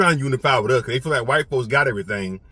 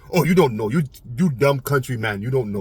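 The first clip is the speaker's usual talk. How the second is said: put-on Jamaican accent. Retelling a London man calling him dumb: imitating a Jamaican accent. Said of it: "he had a Jamaican accent".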